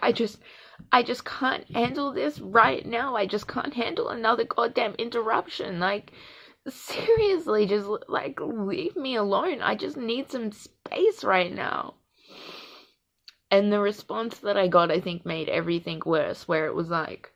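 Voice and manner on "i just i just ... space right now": sobbing through the words, tearful and crying. Retelling a fight, quoting their own words while crying; imitating own crying. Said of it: "And I just started crying".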